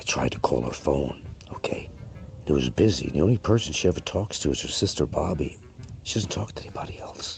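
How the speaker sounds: secretive, hushed whisper throughout. Telling listeners a story, whispering to set the mood. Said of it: "Why am I whispering?".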